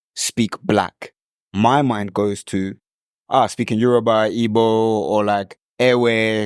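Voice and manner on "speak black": ordinary delivery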